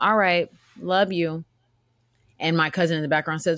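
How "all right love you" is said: slow, guilt-laden, guilt-tripping tone. Retelling an aunt's reply on the phone: imitating a guilt-tripping tone. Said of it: "Trying to put guilt".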